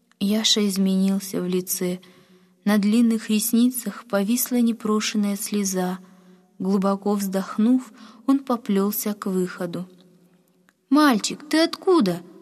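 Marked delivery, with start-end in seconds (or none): 10.9-12.2 high, kind, sympathetic and concerned calling voice. A woman in a shop calls out to a boy heading for the exit, sympathetic call. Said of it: "участливо окликнула вдруг женщина".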